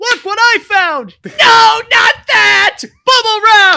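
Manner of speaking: very high, very loud goofy cartoon dimwit voice. Joking about playing with bubble wrap on the recording, speaker does an Ed impression. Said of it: "That's a really good Ed impression".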